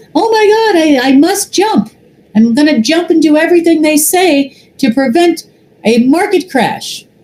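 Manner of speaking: ridiculous, very high, silly cartoon-mouse voice. Mocking people they call ridiculous, the speaker slips into a Pinky voice. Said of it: "I use that voice because it kind of sounds like Pinky in the Brain".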